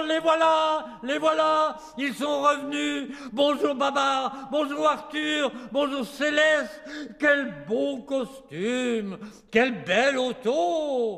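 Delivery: glad, high cries calling out, auto drawn out. Narrator reads the elephants running to babar as he arrives, shouting. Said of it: "courent en criant".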